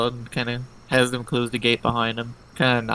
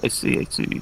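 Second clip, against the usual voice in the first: put-on orc character voice. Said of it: "that was Proc".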